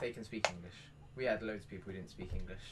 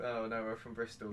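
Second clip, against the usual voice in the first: normal talking voice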